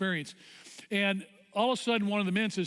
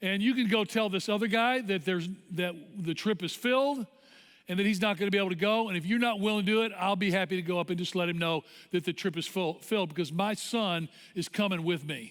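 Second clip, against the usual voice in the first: usual speaking voice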